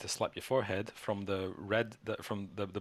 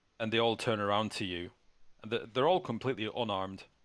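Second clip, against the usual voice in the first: ordinary delivery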